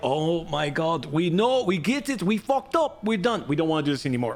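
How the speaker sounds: terrible mock German accent. Voicing what the German people would say, in a terrible German accent. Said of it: "That is a terrible German accent".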